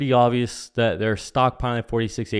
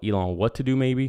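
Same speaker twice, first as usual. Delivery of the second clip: normal talking voice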